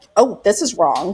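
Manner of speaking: ordinary talk, nothing marked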